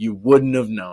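wouldn't stressed at normal pitch.

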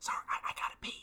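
whispering. Voicing a character in a roleplay scene, excusing herself to use the bathroom, whispering. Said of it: "she just whispers".

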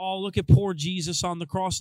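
normal talking voice

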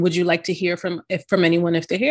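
ordinary talk

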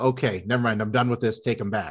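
normal talking voice

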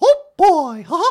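very high, loud, slow cartoon voice. Showing cartoon character voices: Mickey Mouse voice. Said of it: "I could do a little Mickey Mouse".

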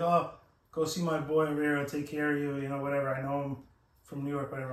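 ordinary delivery

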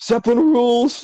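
very high-pitched, loud, called-out shout. Retelling a Simpsons episode, quoting the character: Otto voice. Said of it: "he's like".

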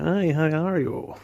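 put-on, high, drawn-out American shop-staff accent. Describing Apple shop staff greeting customers, imitating them: put-on American accent. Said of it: "Talking in the American accents".

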